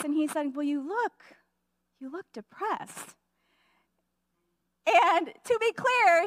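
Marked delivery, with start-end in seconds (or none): 0.5-3.1 play-acted kindly, sympathetic, caring, compassionate concern. Retelling a husband's remark in the garage: imitating a caring, compassionate tone. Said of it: "he said it in a very caring, compassionate kind of a way".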